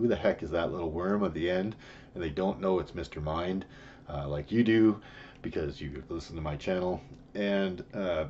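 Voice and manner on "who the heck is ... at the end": normal talking voice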